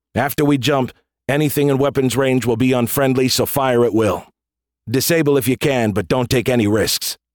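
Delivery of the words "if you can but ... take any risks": ordinary delivery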